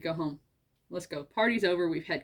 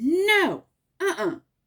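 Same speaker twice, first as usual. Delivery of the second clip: very high, loud, commanding mom-voice shout; 11 semitones higher, 7 dB louder than usual. Retelling yelling at a boy reaching into the chips, retelling a mom-voice yell. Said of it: "that mom voice came out".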